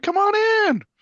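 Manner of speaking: play-acted very high, very loud cheerful voice. Recalling the priest's greeting: imitating a cheerful greeting. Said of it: "He was as cheerful as always".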